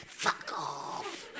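hushed, breathy, whispered, dismissive voice. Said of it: "just going".

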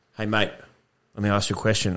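acted, stern, dead-serious bouncer voice. Retelling how a bouncer at a pub approaches: imitating a serious bouncer. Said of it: "a bouncer will come up full serious".

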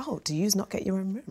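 smug whisper.

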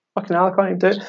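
high, fed-up, exasperated swearing outburst. Recalling coming back and quoting their past self; retelling own exasperation. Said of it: "exasperated self-quote".

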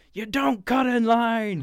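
high, very loud, furious angry scream. Describing an actor's final showdown scene, acting out his scream at the other man: acting out an angry scream. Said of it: "he just screams at him like".

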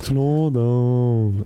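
very slow, sluggish, drawn-out drawl. Trying out a line while others listen and comment, in a very slow drawl. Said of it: "Du säger det för slött".

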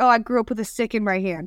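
ordinary talk, nothing marked

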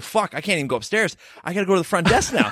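ordinary delivery

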